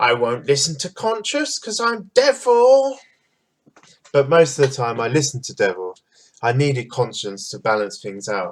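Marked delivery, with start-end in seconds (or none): 0.0-3.0 very high cartoon voice, pitch swooping up and around. Showing how the imaginary voice called Devil sounded: high cartoony Devil voice. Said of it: "Devil's voice sounded like this".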